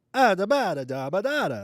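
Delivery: put-on Italian-American accent. Asking about a family's speech: mock stereotypical Italian-American cadence. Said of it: "speak stereotypically".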